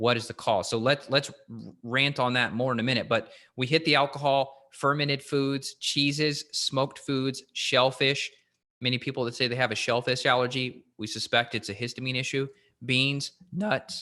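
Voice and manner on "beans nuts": voice cracking and breaking. Listing foods to avoid, the speaker's voice cracks on a word: voice cracking. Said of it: "My my voice cracked".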